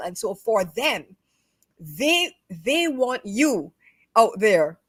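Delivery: heated, worked-up, slowed delivery, fumbling for words. Explaining a personality type to another speaker, heated. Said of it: "I'm so heated".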